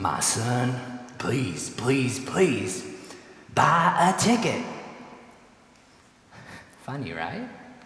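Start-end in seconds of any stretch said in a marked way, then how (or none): 0.0-4.6 slow, worn-out, weary, exasperated disgust. Telling a joke, voicing the saint's statue answering the begging man: weary disgust. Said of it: "says in weary disgust".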